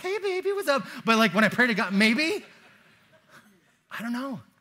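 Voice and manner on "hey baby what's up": put-on pitched-up, sing-song baby-talk voice. Wondering whether their voice changes when praying, showing their baby-talk voice. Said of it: "my voice changes when I talk to babies".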